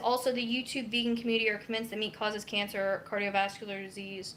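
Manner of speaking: usual speaking voice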